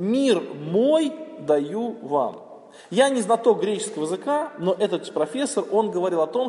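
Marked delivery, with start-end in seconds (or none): 0.0-2.5 мой hit hardest, strong stress. Quoting a line spoken by Christ, stress on мой. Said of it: "Вот акцент на слово «мой»".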